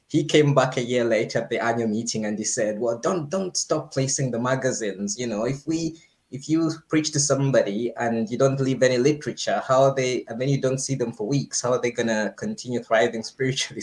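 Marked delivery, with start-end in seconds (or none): none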